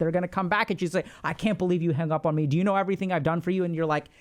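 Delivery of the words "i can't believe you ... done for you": put-on furious voice. Acting out someone upset at being hung up on: imitating an angry person. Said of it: "they're gonna get really, really pissed".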